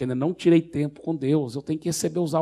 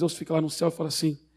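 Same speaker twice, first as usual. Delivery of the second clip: ordinary delivery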